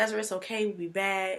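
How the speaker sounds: put-on voice holding back tears. Retelling comforting a crying child on a video call, imitating own near-tearful voice. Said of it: "so I'm getting ready to cry".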